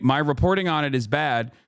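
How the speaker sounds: ordinary talk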